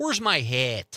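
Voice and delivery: Chicago-style pronunciation. Explaining they try to speak accent-free, demonstrating the accent they avoid; put-on Chicago accent. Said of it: "I also don't want the Chicago".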